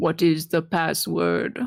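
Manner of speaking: loud booming voice. Casting an illusion at a gate to question those outside: loud booming voice. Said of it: "a loud booming voice".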